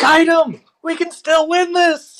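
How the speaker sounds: high, slow, rallying shout. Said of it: "I shout to Jaeger".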